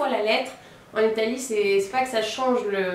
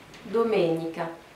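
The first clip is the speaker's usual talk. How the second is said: domenica with stress on second syllable -me-; 4 semitones lower than usual. Teaching pronunciation, saying domenica with stress on the second syllable. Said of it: "on accentue plus la deuxième syllabe".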